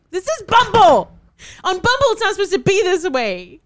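very high, very loud, shrill full-volume yelling. Retelling a reply to a dating match, yelling. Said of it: "Sorry, I need to stop yelling".

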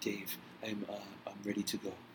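put-on soft male voice. Retelling how a man who grew up in Beirut talked, imitating a soft-spoken man. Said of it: "he was really soft spoken like this".

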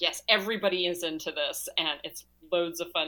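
ordinary talk

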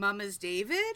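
pitch lifting upward on the name. Describing a shortened question they often ask, rising question inflection on david. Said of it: "but inflection, so it's a question".

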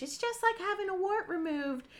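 very high-pitched voice. Retelling a caller's remark, imitating Billy's high pitch. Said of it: "he's saying it in a high pitch".

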